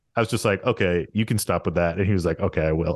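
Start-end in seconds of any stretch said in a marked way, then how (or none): 0.7-2.0 put-on deadpan, much lower. Retelling how they answered someone's protest, retelling own deadpan reply. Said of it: "I just called you out so deadpan".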